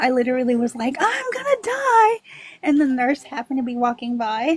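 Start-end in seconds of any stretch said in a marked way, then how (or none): 1.0-2.2 mock very high-pitched, shrill screaming cry. Retelling a sudden emergency in the hospital: imitating own scream. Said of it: "I just screamed out that I was gonna die".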